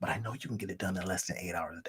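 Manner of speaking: very quiet, hushed half-whisper. Speaker talking to the listener with nobody else in the room, half-whispering. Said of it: "I don't know why I'm whispering".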